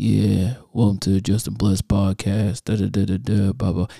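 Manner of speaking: flat, level, unvaried monotone drone. Podcast host showing how not to open the podcast: monotone. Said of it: "talking on the thing on monotone".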